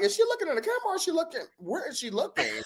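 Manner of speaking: high, fast, baffled rant like a yelling fan.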